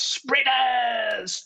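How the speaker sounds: put-on yell, pitched way up, shouted. Retelling how a passing cyclist yelled at two runners: imitating a man yelling. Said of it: "he yells out at us".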